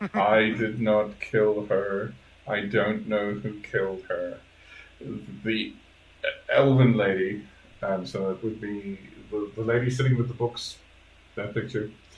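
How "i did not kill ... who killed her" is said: dry, expressionless, flat deadpan delivery. Voicing a character in a role-play scene, in a deadpan voice. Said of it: "in a deadpan voice".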